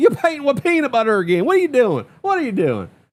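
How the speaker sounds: put-on thick, heavy country accent, swooping high. Retelling what a man told him, in a thick country accent. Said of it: "he had that big old thick country accent".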